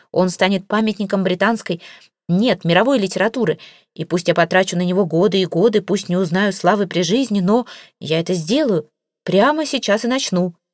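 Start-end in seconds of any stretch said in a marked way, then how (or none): none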